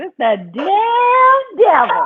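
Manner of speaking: put-on very high, slow old woman voice, "damn" stretched out. Speaker complains about sound issues, imitating granny's voice. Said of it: "I'm gonna say it like my granny does".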